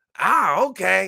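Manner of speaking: high, slow, loud incredulous voice. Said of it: "And she like".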